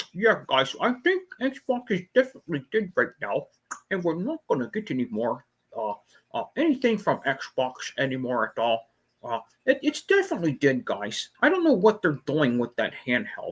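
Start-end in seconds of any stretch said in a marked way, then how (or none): 0.1-11.3 soft, swooping mumble as if mouth full. Mocking how a man talks about Xbox, talking like mouth full of bubblegum. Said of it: "He talks like he got a you know a mouthful of like uh like uh bubblegum balls in his mouth".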